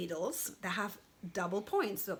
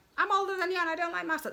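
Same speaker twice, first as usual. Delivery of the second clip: very high, loud, goofy put-on silly voice; 10 semitones higher, 5 dB louder than usual. Retelling what a commenter said about mustard: imitating a commenter in a silly voice. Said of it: "I'm just using silly voice".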